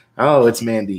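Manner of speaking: plain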